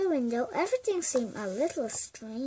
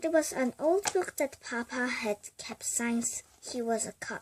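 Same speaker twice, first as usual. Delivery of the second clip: usual speaking voice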